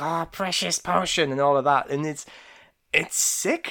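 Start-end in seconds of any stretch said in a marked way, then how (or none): 0.0-1.3 high, put-on creature-like voice, pitched up. Retelling a cartoon scene where a naked addict talks: Gollum voice. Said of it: "And he's talking like Gollum".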